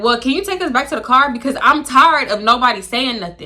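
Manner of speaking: usual speaking voice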